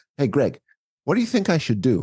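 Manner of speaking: mocking, sarcastic sing-song with swooping pitch. Retelling what a chef friend said back: imitating a sarcastic tone. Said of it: "he did it in a sarcastic way".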